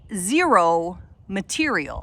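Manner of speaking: "material" stressed hard, drawn out slow and loud.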